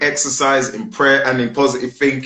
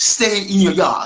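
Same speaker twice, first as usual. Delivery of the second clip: Jamaican accent, raised pitch; 7 semitones higher than usual. Giving advice to listeners, speaker repeats it in a Jamaican accent. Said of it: "in my Jamaican constituents and accent".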